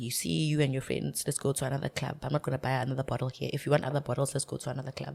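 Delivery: man's low, soft, hushed half-whisper. Describing a man at a club who buys one bottle, the speaker retells his half-whisper. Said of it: "and then he whispers at you".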